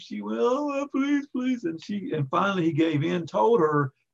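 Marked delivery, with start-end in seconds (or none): 0.4-1.6 very high, tearful crying voice. Retelling the Samson story, voicing the woman who betrayed him, imitating crying and begging. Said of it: "She cried all over him".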